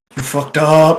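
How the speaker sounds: whispering in character. Playing a character walking past a companion, whispering. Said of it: "whisper as I walk past and be like".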